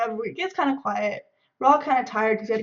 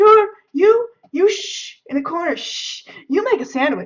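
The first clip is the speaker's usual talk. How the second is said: stammering, pitched-up yelling with shushing sounds; 7 semitones higher than usual. Retelling a friend yelling at the speaker from the back seat: imitating a friend yelling. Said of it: "he starts yelling at me, and he's like".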